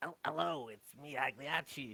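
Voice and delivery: gentler, soft, slightly effeminate character voice. Voicing a character who switches from a prison voice: slightly more effeminate voice. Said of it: "she uses her slightly more effeminate voice".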